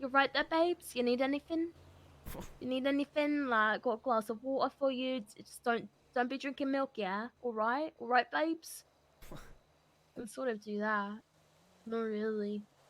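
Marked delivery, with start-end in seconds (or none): 0.0-8.8 Essex accent, rattled off fast. Showing off an accent to the other speaker: Gemma Collins Essex accent. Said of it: "Sort of like a Essex accent".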